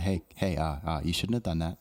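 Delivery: put-on passive-aggressive voice. Speaker acts out the Tesla guy, in a mock passive-aggressive voice. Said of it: "it's my passive aggressive voice".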